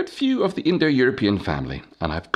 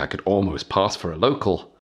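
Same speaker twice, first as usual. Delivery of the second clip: ordinary delivery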